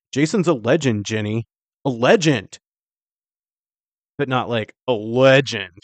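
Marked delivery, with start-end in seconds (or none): none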